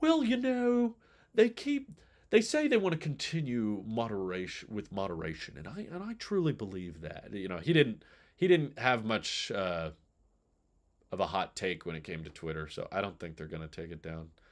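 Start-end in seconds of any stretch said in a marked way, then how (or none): 0.0-7.3 higher voice with big swooping pitch swings. Retelling an interview answer from Tim Cook: Tim Cook impression. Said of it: "Tim was just like".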